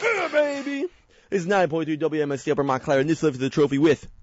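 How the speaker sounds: hyped, swooping, rushed announcer-style delivery. Announcing the trophy winners at the main event, hyped and sped through. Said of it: "I sped through that. Sorry, I got so hyped".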